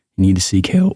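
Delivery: cracking, breaking voice. Telling fans who root against their own player to seek help, voice cracking. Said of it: "And voice crack again".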